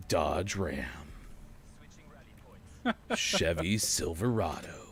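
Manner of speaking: low, deep voice. Speaker reads out American truck names, deep voice. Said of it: "any American truck name has to be said in a deep voice".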